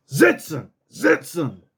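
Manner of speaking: rough, harsh delivery. Showing how to say a dog command: said kind of rough. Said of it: "you got to say it kind of rough".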